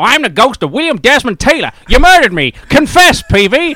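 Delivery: very loud, very high, shrill, booming tough-guy gangster yell. Retelling how a man in sheets loomed up behind a gravestone and cried out: imitating Wineshank's gangster voice. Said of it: "he spoke like a proper gangster".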